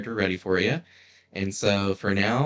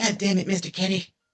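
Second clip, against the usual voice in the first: squeaky cartoon voice, pitched very high; 11 semitones higher than usual. Quoting a cartoon character as a joke: Eric Cartman voice. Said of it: "To quote Eric Cartman".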